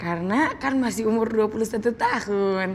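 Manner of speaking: ordinary talk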